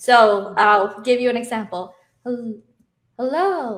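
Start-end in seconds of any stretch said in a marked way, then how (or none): 2.2-3.8 easy, unstrained, relaxed, effortless natural speaking voice. Giving an example of the effortless speaking range: relaxed effortless voice. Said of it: "this is my effortless voice".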